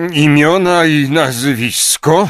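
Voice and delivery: brusque, grumbling voice, pitched a bit high. A man grumbles his question at a timid woman taking her seat. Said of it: "burknął Knot".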